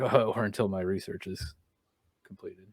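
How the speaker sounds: muttered under the breath. Retelling a scene where a husband adds a line to his wife: under his breath. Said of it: "under his breath".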